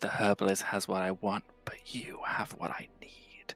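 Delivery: acted menacing whisper. Playing a character looming over a guard, whispering. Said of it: "I'll just whisper".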